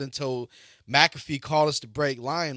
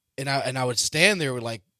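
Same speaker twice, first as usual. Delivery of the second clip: plain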